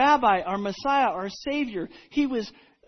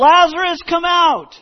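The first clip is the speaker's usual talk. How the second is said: very loud, high call, almost a yell; 7 semitones higher, 11 dB louder than usual. Retelling a bible story, acting out a loud call, almost yelling. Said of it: "called in a loud voice, almost yelling".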